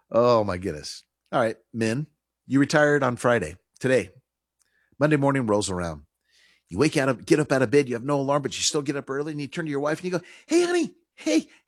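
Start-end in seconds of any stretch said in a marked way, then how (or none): 10.4-11.4 put-on very high, clingy, tugging little-kid voice. Acting out a newly retired husband asking his wife: imitating a clingy little kid. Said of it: "like the little kid pulling on the mom's dress".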